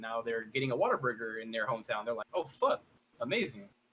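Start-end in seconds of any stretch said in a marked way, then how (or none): none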